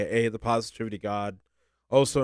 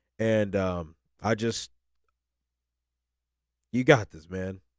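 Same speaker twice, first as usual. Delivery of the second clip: tearful speech, crying while talking; 2 semitones lower than usual. Speaking to listeners and his future self, crying while talking. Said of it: "I'm crying now to be honest".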